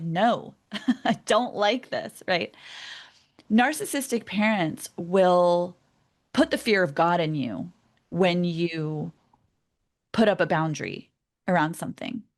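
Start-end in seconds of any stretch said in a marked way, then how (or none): 0.0-2.2 put-on slow, stubborn, childish tantrum voice. Describing children throwing a tantrum: imitating a child's tantrum. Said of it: "they're like".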